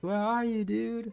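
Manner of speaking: put-on, yelling voice. Retelling how the girlfriend yells for the speaker: imitating girlfriend yelling. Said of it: "The way she yells it".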